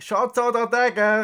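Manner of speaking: high-pitched, loud scream.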